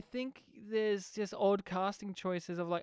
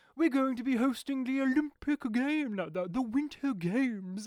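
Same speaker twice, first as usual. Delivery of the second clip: cartoonish mock forced-sounding voice; 4 semitones higher, 5 dB louder than usual. Speaker mimicking how a man sounded, in a forced-sounding voice. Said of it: "It's so forced".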